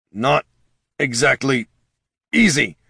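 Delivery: strained growl through clenched, gritted teeth. Jin, the wizard holding a slow-fall spell on six people, growled through gritted teeth. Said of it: "Jin growled through gritted teeth".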